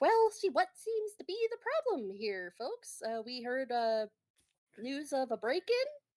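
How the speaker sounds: cartoon schnauzer police dog voice, high and swooping. Voicing a cartoon schnauzer police dog arriving at a break-in: toon schnauzer cop voice. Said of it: "she goes".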